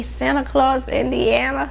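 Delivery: high, amazed, disbelieving exclamation.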